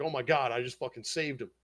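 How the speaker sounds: mock crying, tearful outburst. Retelling a scene where the priestess has just saved Goblin Slayer, imitating someone crying. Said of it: "And she's crying".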